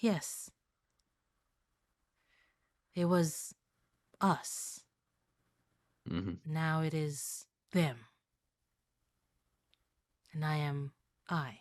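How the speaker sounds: very quiet, soft, gentle, sweet voice. Narrator voicing an unseen voice answering the players, very sweet soft voice. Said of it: "very sweet voice".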